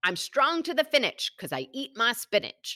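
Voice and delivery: bad, rough cartoon voice, swooping and sing-song. Giving an example, quoting Popeye, in a Popeye voice. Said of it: "I did his voice terribly".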